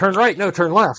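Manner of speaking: two robotic sat-nav voices bickering. Describing two phone navigation voices arguing at once: imitating robot ladies yelling. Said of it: "two robot ladies would be yelling at each other".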